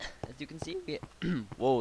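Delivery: sudden voice crack mid-word. YouTuber explaining animations in a video; voice cracking. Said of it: "that was a bad voice crack".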